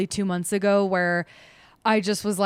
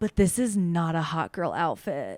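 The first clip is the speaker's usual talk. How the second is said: mock drunk woman's slurred speech; 3 semitones lower, 3 dB quieter than usual. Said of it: "She was super drunk".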